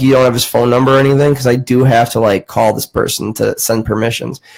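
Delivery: ordinary delivery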